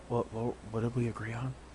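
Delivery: whispering. Player in character whispers into Raziel's ear: whispering. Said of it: "I'm gonna whisper into Raziel's ear".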